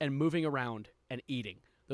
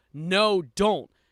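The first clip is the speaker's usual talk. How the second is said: reenacted scream, louder; 4 semitones higher, 8 dB louder than usual. Retelling how she screamed as they walked out the door; retelling a scream. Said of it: "She screams".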